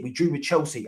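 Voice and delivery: plain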